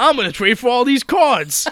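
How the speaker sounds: put-on very high, very loud, hollered Brooklyn accent. Recapping an episode, redoing a character's line after criticism, in Joey's Brooklyn accent. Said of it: "There we go".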